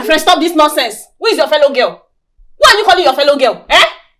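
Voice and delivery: furious, angry yell, loud and high. Confronting a pregnant rival about calling herself a fellow girl: shouting angrily. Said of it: "Why are you now shouting at me now?".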